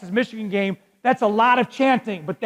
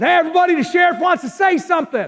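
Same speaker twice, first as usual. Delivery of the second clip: mock hollering, pitched up; 8 semitones higher, 4 dB louder than usual. Retelling how a man got the crowd's attention for the sheriff: retelling someone hollering. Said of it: "He starts hollering".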